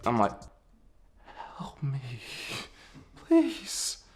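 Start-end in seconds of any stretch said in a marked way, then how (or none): 1.6-3.9 mock hushed, trembling, shaky pleading whisper. Retelling walking up to the bellhop, imitating own shaking plea. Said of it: "I walk up to him and I'm shaking".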